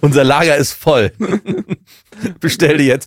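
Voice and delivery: high, loud, laughing, mock teleshopping sales pitch.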